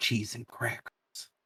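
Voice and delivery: mumbled half to oneself, under the breath. In a tabletop game, a character reacts to a spotted goblin, mumbled under breath. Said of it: "mumbles under her breath".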